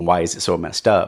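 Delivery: ordinary talk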